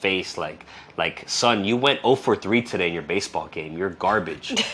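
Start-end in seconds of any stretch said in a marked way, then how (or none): 1.3-4.5 harsh, disappointed father's voice. Acting out a disappointed father scolding his son: imitating a disappointed father. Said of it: "just a father disappointment".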